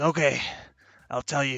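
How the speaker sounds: hard, harsh-sounding, grudging voice. Voicing a character who agrees to tell the group: harsh voice. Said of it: "in a harsh voice".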